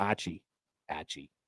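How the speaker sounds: very quiet, hushed, put-on Australian accent. Repeating a player's name as heard on an audio pronunciation guide: imitating an australian accent. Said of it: "I'm doing an impression of what I heard".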